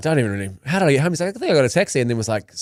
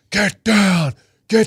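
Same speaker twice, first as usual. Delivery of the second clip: put-on full, powerful man's voice, higher; 7 semitones higher, 3 dB louder than usual. Retelling guards ordering them off a lion statue: imitating a full, powerful man's voice. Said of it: "a full, powerful man's voice being like".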